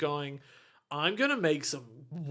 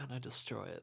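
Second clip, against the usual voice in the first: low, hushed whisper under the breath; 4 semitones lower, 8 dB quieter than usual. Speaker acts out a character's hilarious line, whispered. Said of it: "just like whispers and he's like".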